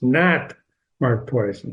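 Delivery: heavy emphasis leaning hard on the word "not". Showing how to read an italicized word in a story, stress on not. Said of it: "the word "not" is in italics... That's the way you read those words".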